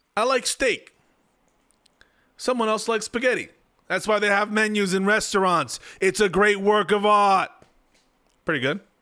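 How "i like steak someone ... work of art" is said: tv-style mob boss voice. Told to read a politician's quote aloud, the speaker reads it in a Tony Soprano voice. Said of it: "replied in the Tony Soprano voice".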